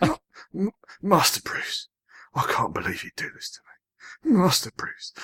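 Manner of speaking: very high, anguished, very upset pleading. Showing someone you can do the voice, addressing Master Bruce, very upset Michael Caine impression. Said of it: "you have to sound very upset".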